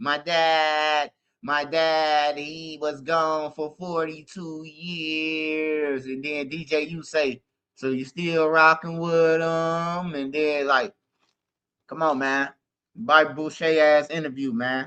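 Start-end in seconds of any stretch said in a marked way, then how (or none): 0.0-6.0 very slow, plodding, dragging, stretched-out delivery. Speaker mocks an interviewee who talks slow: imitating slow talking. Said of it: "he talking all slow".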